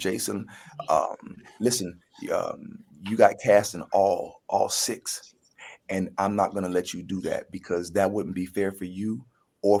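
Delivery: ordinary delivery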